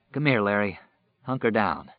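ordinary delivery, nothing marked

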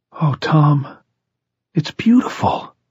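high, overly rapturous gushing, edging on hysteria. A woman admires a man's house on arrival, overly rapturous. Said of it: "Alice said in a too rapturous voice".

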